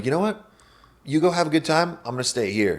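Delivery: suddenly hushed, quiet, dead serious, no joking. Retelling telling him to go party without you: imitating a quiet, serious tone. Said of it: "I just get real quiet and serious".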